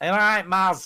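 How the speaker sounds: put-on Scouse Liverpool accent. Quoting how he greets someone, trying it in an attempted Scouse accent. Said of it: "I should do it in a Scouts accent".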